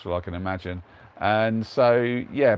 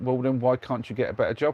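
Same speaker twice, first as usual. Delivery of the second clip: usual speaking voice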